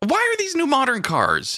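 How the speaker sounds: exasperated, very high, swooping, climbing voice. Questioning the other speaker about their new car, voice getting pretty high. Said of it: "My voice is getting pretty high".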